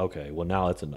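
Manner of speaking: plain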